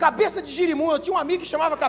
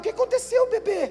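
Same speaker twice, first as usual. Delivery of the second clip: put-on doting baby talk, higher pitched; 5 semitones higher than usual. Acting out a mother who babies her teenage son: doting baby talk. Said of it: "tem mãe que trata filho de quinze anos desse jeito".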